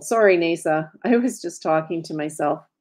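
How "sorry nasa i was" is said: plain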